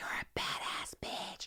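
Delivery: whispered, barely voiced, very soft and breathy. Retelling leaving set while someone was on the phone: retelling a whisper. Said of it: "and I whispered".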